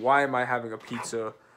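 ordinary talk, nothing marked

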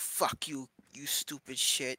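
fake cat-like creature voice. Voicing the Pokémon Litten while reading the game: Litten voice. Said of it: "Litten's all like".

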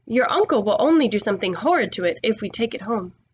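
plain reading voice

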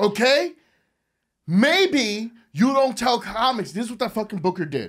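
furious ranting. Ranting about a show's booker to other speakers: angry ranting. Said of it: "he has no idea how angry I'm getting right now".

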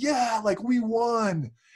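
mild, slow yelling. Telling how a BYU fan got in Lambert's face, imitating a fan screaming. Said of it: "starts screaming at him".

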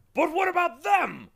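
shrill, very loud, high terrified cry. A terrified bug as demons leap forward to seize them, terrified cry. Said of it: "cried the terrified bug".

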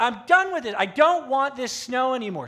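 very loud, high-pitched, fed-up yelling. Telling of a big snow at the grandparents' house, the speaker is retelling someone yelling. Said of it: "he just starts yelling".

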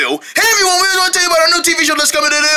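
hurried, too-fast, rattled-off announcement delivery. Announcing the new TV show to everyone, rushing it too fast. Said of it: "That's too fast".

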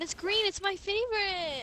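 high, loud, delighted thrilled squeal.

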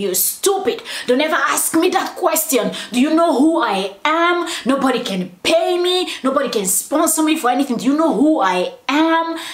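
put-on angry ranting. Retelling how a man screamed at a reporter over a question, imitating someone yelling. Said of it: "he was yelling at the guy".

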